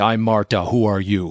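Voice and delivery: put-on thick, laid-on German accent. Retelling a woman walking up and introducing herself, in Marta's thick German accent. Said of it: "she said in that thick German accent".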